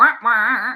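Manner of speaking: loud, goofy, put-on silly voice. Speaker says the team's nickname for the awards in a silly voice. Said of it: "I cannot resist saying it in a silly voice".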